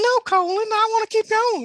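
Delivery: very high, whiny, whimpering dog voice. Reading a story aloud, voicing a whimpering wolf: whimpering dog voice. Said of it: "That's what dog sounds like".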